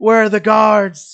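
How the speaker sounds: put-on panicked screams. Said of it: "People are screaming".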